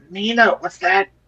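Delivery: whispered. A player's character whispers to another character, Nina, whispering. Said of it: "I'm gonna whisper".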